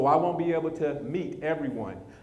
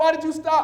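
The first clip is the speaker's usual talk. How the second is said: very high, loud, tearful crying voice; 13 semitones higher, 6 dB louder than usual. Retelling a story of a father and son: imitating a father crying. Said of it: "As the father's crying".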